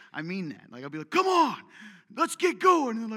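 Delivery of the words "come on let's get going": drawn-out yell, very loud and high-pitched. Retelling urging women to get going: imitating own past yelling. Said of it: "Why are you yelling?".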